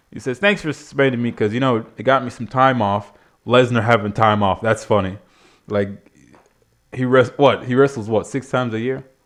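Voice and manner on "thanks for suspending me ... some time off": plain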